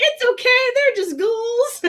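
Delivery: very high-pitched, bright and cheerful. Retelling a scene where Lucy shrugs off a cruel act: imitating Lucy saying it with a smile. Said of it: "with a smile on her face".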